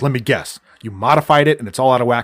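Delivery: irritated, fed-up, angry, pissed-off voice. Retelling a movie scene, quoting John Goodman: imitating an angry John Goodman. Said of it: "he was all pissed off".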